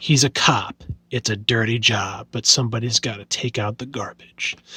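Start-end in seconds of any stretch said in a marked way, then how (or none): 1.1-4.5 very low, deep put-on old-man voice. Reading a cover line about a cop: deep old man voice. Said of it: "you see how I'm doing that deep old man voice?".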